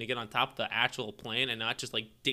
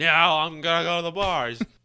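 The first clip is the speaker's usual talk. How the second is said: mock drunken yelling, higher and louder; 6 semitones higher, 9 dB louder than usual. Acting out a drunk roommate who refuses to go to bed: imitating a drunk roommate screaming. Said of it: "screaming at you to".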